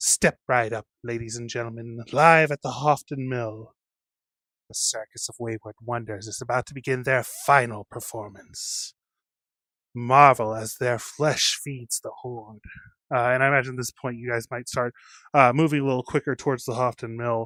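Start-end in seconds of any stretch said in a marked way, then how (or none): 0.0-12.6 clashing, discordant voices speaking together as one. Game master voicing staring rats speaking together, in a discordant chorus of voices. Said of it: "in a discordant chorus of voices".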